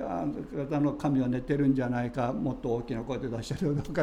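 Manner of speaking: ordinary talk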